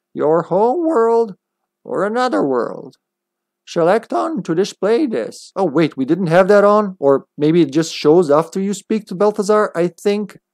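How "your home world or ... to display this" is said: put-on elderly martial-arts master character voice. Reading a game's tutorial text aloud, in a Master Roshi voice. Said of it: "Master Roshi voice I'm doing there".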